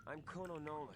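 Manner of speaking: ordinary talk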